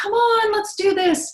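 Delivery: very high, squeaky, coaxing pet-talk voice. Showing the voice she uses with her dog, higher-pitched voice. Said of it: "higher pitched voice".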